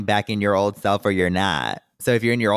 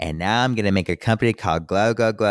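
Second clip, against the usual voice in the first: normal talking voice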